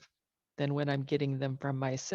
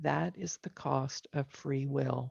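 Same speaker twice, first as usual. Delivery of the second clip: put-on quiet, still, calm whisper. Retelling a voice heard in reply: imitating a quiet, calm whisper. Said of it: "most quiet, still, and calm whisper".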